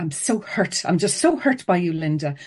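angry, hurt, aggrieved voice. Explaining how blame pushes people away, the speaker demos an angry voice. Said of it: "saying in an angry voice".

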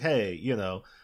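normal talking voice

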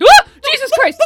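startled, scared scream. Suddenly frightened by someone moving in the background: startled scream. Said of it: "freaked me the fuck out".

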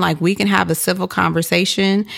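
ordinary delivery

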